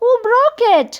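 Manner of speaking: very high, frightened, alarmed cry. Reading a story aloud, a character asks who broke it: alarmed. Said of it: "said Bets in alarm".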